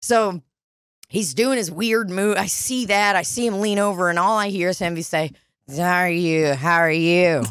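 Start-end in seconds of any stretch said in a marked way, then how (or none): 5.8-7.4 put-on slur, lower and slower. Retelling a man on the street leaning over to greet women, imitating slurred speech. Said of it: "a slurred".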